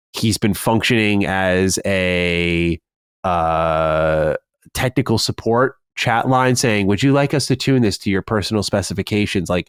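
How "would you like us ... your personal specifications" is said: play-acted, falsely sincere, heavily sarcastic helpful tone. Quoting his reply as a technical support chat line: imitating a sarcastic reply. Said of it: "being very sarcastic".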